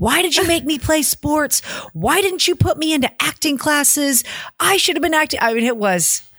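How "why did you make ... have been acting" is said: high-pitched, screaming, out-of-control meltdown. Retelling a sister's street meltdown at their mother: imitating someone screaming in a meltdown. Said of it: "started screaming at my mother and saying".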